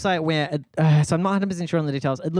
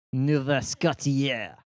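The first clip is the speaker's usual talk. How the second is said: fake French accent on Nova Scotia; 3 semitones lower than usual. Guessing about canada, saying the place name: put-on french accent. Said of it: "That's a good French accent".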